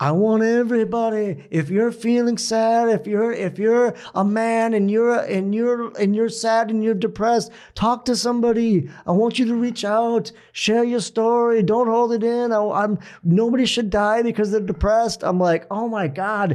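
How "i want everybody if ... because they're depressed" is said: put-on pitched-up Liverpool accent. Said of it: "in his greatest Beatles accent".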